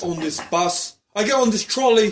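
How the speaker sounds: put-on clumsy English accent. Retelling how a man says it, the speaker tries an attempted english accent. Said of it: "he says it with an English accent".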